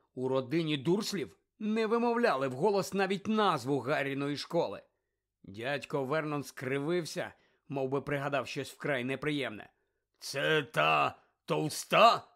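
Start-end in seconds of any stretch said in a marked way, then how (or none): 10.2-12.2 loud, gruff, rough growled delivery. An uncle finally answers his nephew after a pause; growled. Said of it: "врешті прогарчав він".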